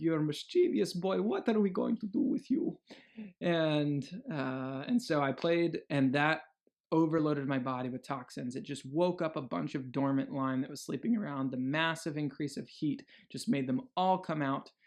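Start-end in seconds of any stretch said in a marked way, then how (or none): 0.0-2.8 bad, terrible Russian accent, high and swooping. Quoting his Russian doctor, in a bad Russian accent. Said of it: "she's like".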